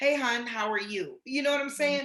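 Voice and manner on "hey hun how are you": soft, tender voice, slower. Speaker demonstrates how men should greet someone on the phone, in a tender voice. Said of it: "say in a tender voice".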